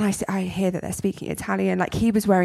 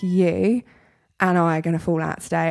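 ordinary talk

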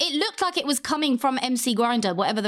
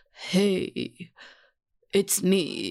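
heavy, deep, dropped, self-serious superhero voice; 4 semitones lower than usual. Friends comparing Batman voices, one shows the Lego Batman voice. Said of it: "the Lego Batman voice is like".

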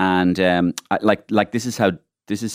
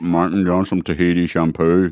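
put-on Northern Irish accent. Acting out a joke shower scene between two politicians: Gerry Adams impression. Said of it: "pretending I'm Gerry Adams and Martin McGuinness".

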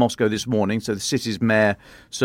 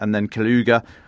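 normal talking voice

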